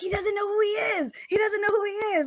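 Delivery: relieved and excited, high-pitched and fast.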